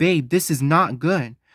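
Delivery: put-on frantic, alarmed, panicked screaming. Retelling rushing back to Samantha with an injured Riff: imitating own past screaming. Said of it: "I'm literally screaming".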